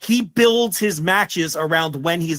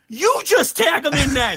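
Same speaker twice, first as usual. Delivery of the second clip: mock very high exasperated screaming; 10 semitones higher than usual. Retelling watching a tag-team match, yelling at the TV: retelling screaming at the TV. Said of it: "I'm just screaming at my TV".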